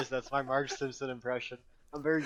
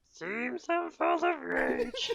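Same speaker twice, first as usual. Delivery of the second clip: drawn-out, very high, swooping, sing-song bad drawl. Trying out a quoted line from a picture: Marge Simpson impression. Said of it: "How's that Marge?".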